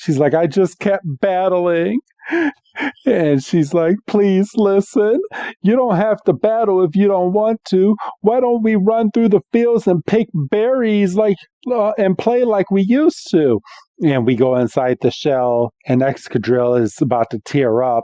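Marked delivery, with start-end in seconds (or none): 0.3-13.6 put-on tearful voice, higher. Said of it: "she's all getting all teary-eyed".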